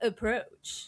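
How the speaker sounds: gravelly voice, half seductive and alluring. Game narrator voicing a character who invites a player to approach, gravelly, almost seductive voice. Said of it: "in a gravelly, almost seductive voice".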